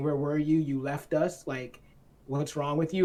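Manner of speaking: ordinary talk, nothing marked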